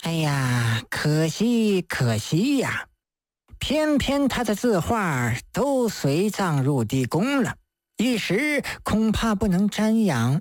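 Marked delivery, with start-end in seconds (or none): none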